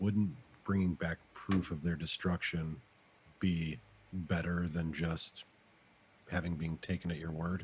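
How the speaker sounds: low, hushed, half-whispered aside. Half-whispering a remark from the corner, directing it at Jason, half-whispering. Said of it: "I'll just whisper from the corner".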